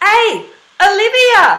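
hard glottal onset on "Hey", very loud and high. Demonstrating calling to a friend who almost falls over, glottal pop exclaim. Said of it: "exclaim with a glottal pop".

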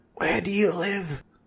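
very high, hushed stage whisper. Narrator reads Fezzer muttering a question mid-introduction to royalty; stage whisper. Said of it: "Fezzer muttered in a stage whisper".

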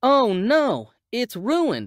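slow, drawn-out crying out. Darren sees the pieces littering the floor after his fall and exclaims. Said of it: "Darren exclaimed".

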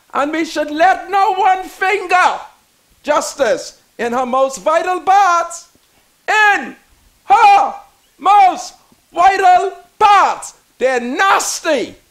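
said angrily. Just before asking for some water, you plead for justice, angry. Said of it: "And I'm angry".

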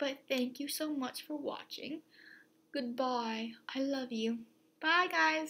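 funny put-on British accent. Signing off a video to viewers, in a funny British accent. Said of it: "I thought I would do a funny British accent".

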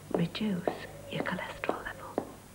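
in a whisper. In a cereal advert, echoing the previous line, whispering.

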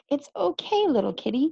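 sweetly spoken, soothing. Gabby reaches out for the cat again, speaking to it sweetly. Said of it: "she said sweetly".

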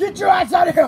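loud, high, furious shouting yell.

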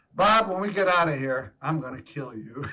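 low muttering under the breath. Recalling pretending to cry behind a handkerchief, retelling an under-breath mutter. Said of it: "saying under my breath to Bob".

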